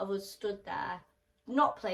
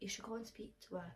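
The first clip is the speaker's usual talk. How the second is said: poor imitated whisper, quieter; 13 dB quieter than usual. Retelling a friend urging someone to go talk to her: imitating a terrible whisperer. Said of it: "terrible whisperer".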